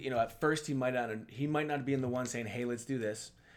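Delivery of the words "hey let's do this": ordinary delivery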